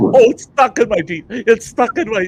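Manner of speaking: put-on frantic, flustered, panicked outburst, repeating itself. Retelling someone with food stuck in his teeth: imitating Travis freaking out. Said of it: "he's freaking out 'cause it's stuck".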